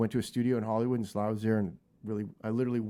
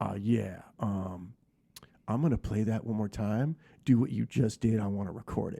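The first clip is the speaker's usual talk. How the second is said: deep, low, gravelly growling voice. Retelling what Sly said over the talkback button, in a deep gravelly Sly impression. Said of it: "he had that deep gravelly voice".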